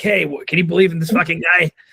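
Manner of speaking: put-on Boston accent. Imitating people back from summer near boston: imitating a boston accent. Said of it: "what's the Boston accent?".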